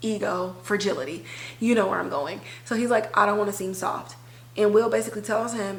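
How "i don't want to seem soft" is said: usual speaking voice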